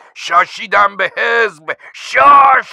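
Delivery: high, very loud, weary, tearful crying yell. Over the radio, the narrator answers the party's threat with a tired, tearful shout. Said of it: "با صدای خسته و گریانی که از همه بیسیم های دنیا شنیده شود فریاد زدم".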